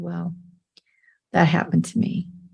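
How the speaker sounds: mock quiet, serious, hushed whisper. Recounting a conversation about the symposium talk, imitating the other person's quiet whisper. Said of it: "he just very quietly whispered".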